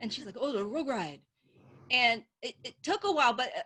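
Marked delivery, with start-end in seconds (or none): 0.4-1.2 cartoon dog voice, log said as rug. Retelling her mom asking about a ride at an amusement park: imitating mom's Scooby-Doo voice. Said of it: "It's Scooby-Doo".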